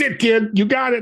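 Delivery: acted gangster voice, pitched high. Quoting a man who advised him years ago, in a Godfather-like voice. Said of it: "he had that Godfather-like voice".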